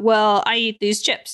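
imitated Indian accent. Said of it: "how your dad would talk".

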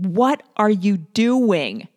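loud, drawn-out screaming voice. Telling of going up to a man's truck window, reenacting screaming at him. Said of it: "I go up to the window and I scream at him".

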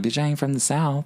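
ordinary talk

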